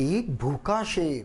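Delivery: भूखा शेर weighted and emphasized. Marking stress and pauses in a sentence: stress on भूखा शेर. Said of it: "भूखे शेर पर मैं जोर दूंगा।".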